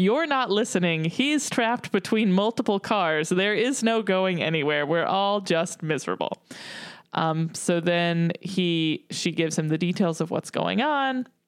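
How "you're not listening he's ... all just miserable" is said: ordinary talk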